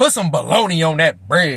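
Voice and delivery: acted-out scornful, dismissive, disdainful tone. Retelling a stepdad's demand about his sandwich: imitating disdainful stepdad. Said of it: "looking over with disdain".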